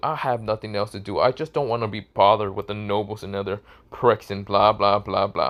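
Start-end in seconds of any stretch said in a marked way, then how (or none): none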